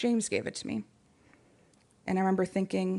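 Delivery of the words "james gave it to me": mock matter-of-fact, plainly stated delivery. Retelling a classmate's reply about her necklace: imitating a monotone voice. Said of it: "in a monotone voice".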